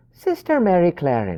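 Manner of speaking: terrible put-on Irish brogue. Describing the film's disguised nun and saying her name: terrible Irish accent. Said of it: "the terrible Irish accent I just did".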